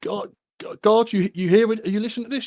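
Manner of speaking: yelling out. Voicing a prisoner calling for the guard: shouting for the guard. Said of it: "he's shouting out".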